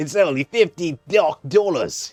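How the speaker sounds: put-on Australian accent. Voicing a game character selling a tutorial: put-on australian accent. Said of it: "I don't know why he's Australian".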